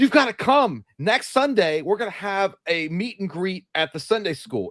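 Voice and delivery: mock over-eager, pumped-up enthusiasm, high pitch. Imitating a hyped-up guy inviting people to a Sunday meet and greet: imitating a hyped-up guy. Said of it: "hyped up about".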